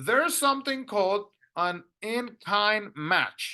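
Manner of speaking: slow, careful, explaining tone.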